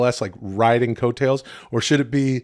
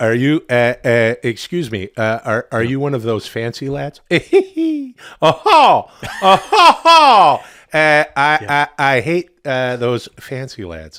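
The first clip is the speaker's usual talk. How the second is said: loud, slow, swooping, stumbling delivery; 6 dB louder than usual. Acting out David Letterman as the dad calling someone a fancy lad: David Letterman voice. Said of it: "That's what he calls Chris Elliott".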